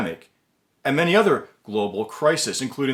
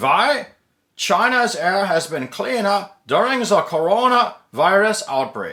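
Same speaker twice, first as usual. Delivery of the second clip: stagy put-on German professor accent, pitched up; 5 semitones higher than usual. Reading an article title aloud, in a put-on German professor accent. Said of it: "I'll do the German professor voice for you here".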